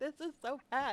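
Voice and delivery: put-on crying, high, loud tearful wail. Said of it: "I'm sitting here crying as I'm like".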